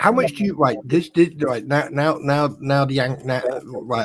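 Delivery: angry, stumbling stutter, tripping over words. Ranting to the other host about per-mile vehicle taxes, angry stuttering. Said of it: "you can tell I'm stuttering because the angry spawn's popped out now".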